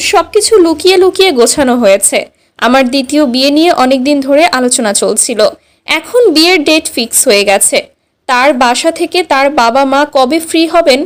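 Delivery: ordinary talk, nothing marked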